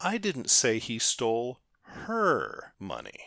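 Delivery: the word her stressed and punched loud.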